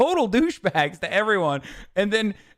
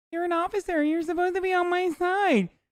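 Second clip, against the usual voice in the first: put-on high-pitched girly voice; 8 semitones higher, 3 dB quieter than usual.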